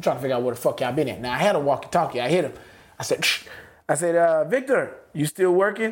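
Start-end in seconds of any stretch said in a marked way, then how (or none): 4.2-5.9 put-on Mexican accent in English. Calling someone over a walkie-talkie, slipping into a put-on Mexican accent. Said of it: "I got a Mexican accent".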